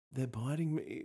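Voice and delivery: put-on gritted-teeth voice. Retelling what a woman said at the end of the wedding aisle, imitating speaking through gritted teeth. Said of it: "gritting her teeth going".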